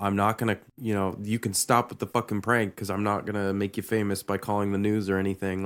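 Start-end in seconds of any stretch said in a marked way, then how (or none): none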